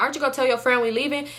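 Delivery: ordinary delivery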